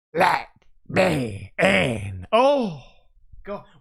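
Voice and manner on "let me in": very low, deep, eerie, creepy alien voice. Reacting to a creepy voice on a recording, the speaker mimics it: imitating a creepy alien voice. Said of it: "like that, just like an alien".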